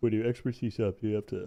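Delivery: words spoken through a yawn. Speaker asking a question mid-conversation: yawning while talking. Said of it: "Sorry, I was yawning".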